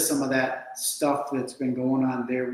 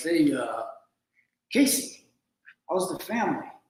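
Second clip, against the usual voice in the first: put-on Italian mobster accent, friendly on top; 3 semitones higher than usual. Acting out what some guy says to casey at a restaurant, italian mafia accent. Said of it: "I got a little Italian kind of mafia accent".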